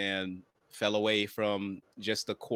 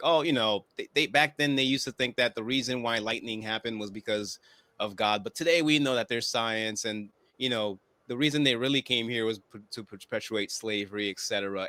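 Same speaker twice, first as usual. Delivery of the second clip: plain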